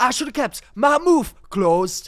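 put-on very high, very loud, belted, weak Geordie accent. Quoting a Geordie Shore line they love, in an attempted Geordie accent as Chloe Ferry. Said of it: "you should probably cut it in a better accent next time".

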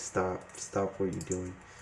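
low, soft, flat, hushed voice.

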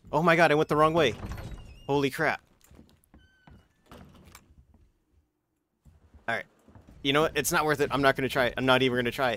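fast, swooping, flustered, panicked rambling. Player in a game realizing they went the wrong way, panicking. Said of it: "I'm panicking".

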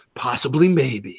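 very low, dead-serious, grave expert voice. Imitating a guy on the documentary who looks really serious. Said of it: "he looks really serious and they, and he goes".

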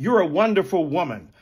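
ordinary delivery

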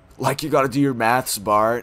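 put-on surfer-style cartoon girl voice. Speaker does a series of Simpsons-as-surfers voices: Lisa Simpson as surfer. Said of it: "Lisa Simpson if she was a surfer".

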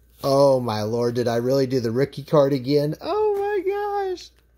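giddy, gleeful delight, high and swooping. Opening a returned package of cards and finding a rookie card: glee in voice. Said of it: "That's glee in my voice".

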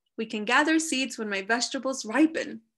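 plain reading voice

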